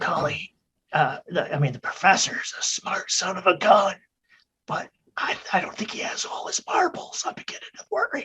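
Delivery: soft, hushed, audible stage whisper. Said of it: "I lean over and stage whisper".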